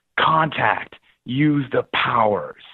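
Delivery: put-on slow, strong, broad American accent. Australian recounting what it said to him, in full-blown american accent. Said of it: "in a full-blown American accent".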